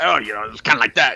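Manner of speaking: negative, dismissive tone. Imitating how the other speaker just said it: imitating a negative tone. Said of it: "just the way you said it".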